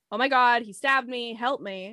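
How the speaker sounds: ordinary talk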